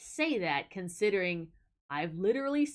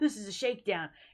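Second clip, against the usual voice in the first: hard, tough-guy mugger voice. Acting out a masked robber grabbing someone: acting a tough robber. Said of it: "a guy with the ski mask thing ... mad tough, and he goes".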